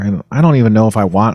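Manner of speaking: ordinary talk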